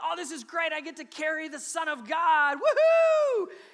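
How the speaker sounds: very loud, thrilled, drawn-out, swooping excited gush. Acting out how Mary did not reply: imitating an excited Mary. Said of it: "Not a lot of excitement in her voice there".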